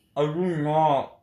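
talking with mouth full while eating. Denying a teasing claim with food in the mouth: eating while talking. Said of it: "You say with a mouthful of the food".

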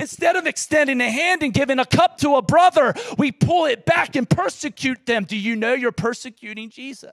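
passionate, fervent yelling. Addressing listeners, apologising for the volume, passionate yelling. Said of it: "I'm sorry I'm yelling".

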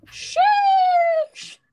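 very high, loud, squealed 'sheesh'.

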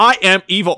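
very high, very loud robotic voice. Starting a recording for the podcast, the speaker says it in a robotic voice. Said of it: "It's just going to sound like a robot".

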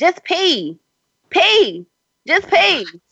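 very high, very slow, swooping drawn-out shout. Recounting a sexual encounter, the speaker retells what a partner yelled, retelling a yell. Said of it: "he yells".

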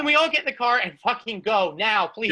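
ordinary talk

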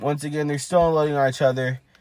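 ordinary talk

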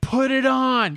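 put-on screaming-crowd sound. Recalling the audience's reaction at a game reveal, imitating a screaming crowd. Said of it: "The whole audience was just screaming".

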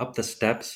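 normal talking voice

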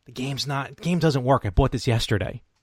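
imitated whisper. Retelling quietly telling a vendor a game doesn't work: imitating own whisper. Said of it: "I kinda whisper to him".

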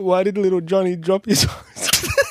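very high, loud, talking through tears of laughter. Trying to tell a joke to another speaker: laughing to tears while talking. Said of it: "I don't know why I'm crying".

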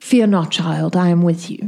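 whisper in very low baritone. Voicing a presence speaking into a player's mind: whisper in a very low baritone. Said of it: "a whisper of a very low baritone".

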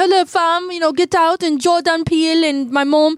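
put-on British accent. Retelling an award speech by Daniel Kaluuya: imitating Daniel Kaluuya's British accent. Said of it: "I heard his accent".

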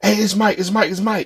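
real soft-spoken, soft, high little voice. Retelling how a friend announced himself at the door: imitating Mike's soft voice. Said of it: "he got, like, a real soft voice".

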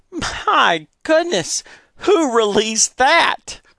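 sudden, very high, drawn-out exclamation. Mrs. Reed, at the front of the classroom: exclaimed. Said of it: "Reed exclaimed".

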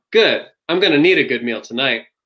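stiff, wooden delivery like bad acting. Reenacting a Space Jam scene to show poor acting: imitating Michael Jordan's bad acting. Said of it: "Jordan says in this exact tone".

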